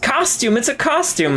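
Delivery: very high-pitched shouting. Voicing Robert as he runs after someone in the game: yelling. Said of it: "He he yells".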